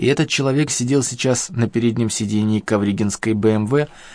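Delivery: ordinary delivery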